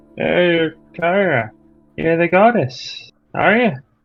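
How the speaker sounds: put-on slightly drunk, slurred speech. In character, greeting the goddess again: slightly drunk slurring. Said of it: "kinda slurring her words".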